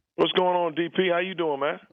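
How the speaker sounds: forced, fake, hyped upbeat energy, very high-pitched. A guest redoing his greeting after the host asks him to try again, fake energetic greeting. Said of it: "That was fake energy right there".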